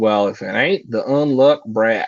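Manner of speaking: put-on country accent. Voicing a character while playing a game, in a country accent. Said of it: "I gave him a, a country accent".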